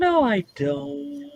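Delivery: very high voice, "don't" dragged out. Acting out J P Morgan answering a questioner: high voice as J P Morgan. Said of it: "you only use the high voice when you're lying".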